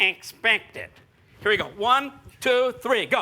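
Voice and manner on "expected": nasal voice, pushed up into the nose. Demonstrating a word for the group to copy: nasal voice. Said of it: "[nasally voice]".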